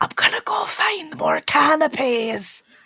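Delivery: slow, high-pitched whisper. Voicing a character who leans to Bruno at a party: whispering in character. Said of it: "she's gonna whisper to Bruno".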